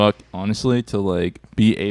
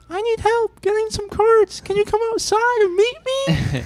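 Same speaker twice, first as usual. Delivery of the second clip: put-on very high, girly, anime-style little girl voice. Retelling what she said, in a little girl voice. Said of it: "little girl voice".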